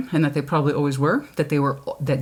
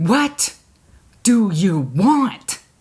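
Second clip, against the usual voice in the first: put-on man screaming, higher; 4 semitones higher, 4 dB louder than usual. Retelling a movie scene where the main guy screams at her: imitating a man screaming. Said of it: "that's all he's screaming at her".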